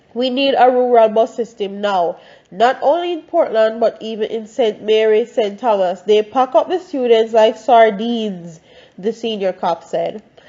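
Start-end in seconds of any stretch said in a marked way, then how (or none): none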